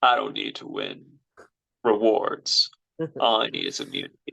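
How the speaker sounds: low, gravelly voice. Recapping a game where Dom wins immunity, acting out his words: gravelly Dom impression. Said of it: "I need to get more gravelly in my voice".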